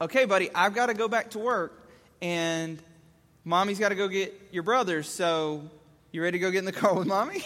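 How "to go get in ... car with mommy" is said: ordinary talk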